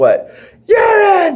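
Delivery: mock, very high, words bubbling through laughter. Retelling a backstage pee joke, imitating someone laughing while talking. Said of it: "and then just start laughing like".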